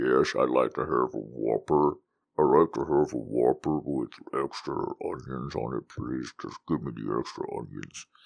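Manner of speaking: very low, deep, quiet, hushed, eerie sinister murmur. Retelling an actor ordering at drive-through windows, Buffalo Bill voice. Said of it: "Buffalo Bill from Silence of the Lambs".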